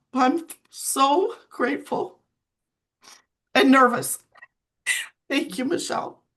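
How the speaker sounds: high, tearful voice breaking with crying. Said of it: "I'm sorry for crying".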